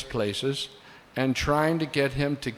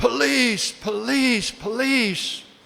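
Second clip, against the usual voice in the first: mock very high-pitched cries, repeated over and over; 10 semitones higher, 4 dB louder than usual. Recounting a kidnapping scare, retelling a shout for the police. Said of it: "Then I just started to shout".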